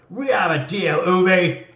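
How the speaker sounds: very loud, booming, drawn-out orc hollering. Voicing an orc yelling in an argument with an officer: yelling orc voice. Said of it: "he's just yelling out".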